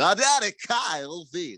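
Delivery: high, college football play-by-play broadcaster voice. Recalling living in Texas, the speaker mimics a broadcaster: Texas A&M broadcaster impression. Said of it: "broadcaster would do that all the time".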